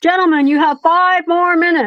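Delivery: put-on high-pitched game-show host shouting. Describing the loud tv noise someone sleeps to, retelling a tv yell. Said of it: "it's people yelling".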